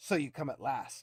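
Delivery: hissing, grating demon voice, grinding every word. The narrator voices the imprisoned demon champion addressing the party: hissing, grating voice. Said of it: "Echoes his hissing, grating voice".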